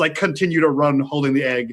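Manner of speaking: ordinary talk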